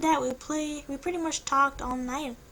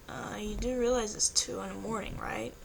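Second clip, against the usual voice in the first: plain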